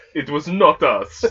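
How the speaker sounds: very slow, deliberate, loud, high formal delivery. Imitating Putin denying Russia's involvement: Putin impression. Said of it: "Putin's face when he talks about it? ... he's just like".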